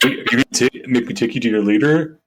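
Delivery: brainless meathead jock voice. Retelling what one of the alien beings said, dumb jock voice. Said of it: "It's a dumb jock".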